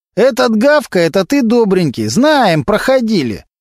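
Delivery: mocking, needling sneer. A burglar responding to Kostya: snide. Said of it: "ехидно улыбнулся клешня".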